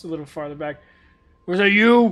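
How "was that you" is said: very loud, pitched-up huge orc voice. Voicing an orcish man pointing at a party member: orcish man voice. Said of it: "He just points over to Fez".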